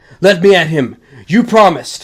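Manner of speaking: furious yelling. Held from behind by the arms, he protests, shouting. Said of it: "he's shouting at this point".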